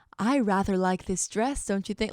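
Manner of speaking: put-on talking like an elderly British lady. Recalling how she used to talk in her old videos, imitating an old british lady. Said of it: "I was talking like an old British lady".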